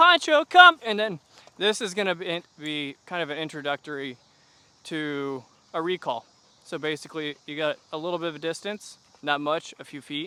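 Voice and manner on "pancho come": bright excited shout, very high and very loud. Showing how to call a dog for a recall: high, excited voice. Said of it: "you can get high in your voice and go".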